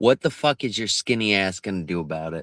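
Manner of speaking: voice dropped to a close hush. Retelling what a man said while being escorted out: imitating a half-whisper. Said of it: "He whispered into my ear".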